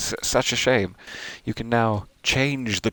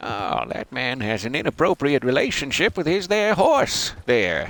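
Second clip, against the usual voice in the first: old-fashioned put-on way of talking; 4 semitones higher than usual. Putting on a voice for a bit, in an old-timey way of talking. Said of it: "That's how people talked, right?".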